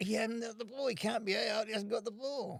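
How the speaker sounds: acted high-pitched yelling. Retelling protesting to the umpire that the catcher lacked the ball: retelling own yell. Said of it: "I'm yelling out to the guy".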